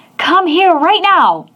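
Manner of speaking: very high, harsh barked voice. Showing how a parent might call a child over, barking a command. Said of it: "instead of barking".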